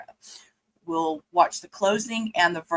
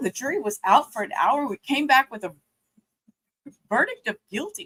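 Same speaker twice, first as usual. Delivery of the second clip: high, choked-up voice, catching; 7 semitones higher than usual. Speaking to listeners after a hard scene, choked up. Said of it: "Sorry, I got choked up just a second there".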